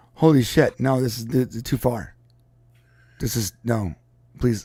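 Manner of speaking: stumbling over words, panicked. Retelling a tech figure's reaction to AI going too far: imitating a panicked Elon Musk. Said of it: "And then he goes".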